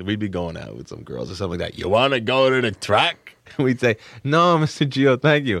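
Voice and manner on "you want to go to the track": put-on high Brooklyn accent, calling out. Recalling a man from Brooklyn inviting the boys to the track, imitating Mr. Gio's Brooklyn talk. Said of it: "He would talk like that".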